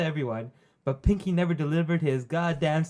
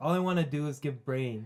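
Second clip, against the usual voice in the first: ordinary delivery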